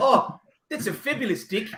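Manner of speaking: vowel in deck shifted toward i, sounding like dick. Retelling how Amy talked when walking into houses, imitating Amy's accent. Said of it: "would walk into houses and be like".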